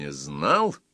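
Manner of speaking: contemptuous. The tsar repeats his son's admission that he did not know the lesson, contemptuously. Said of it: "презрительно повторил царь".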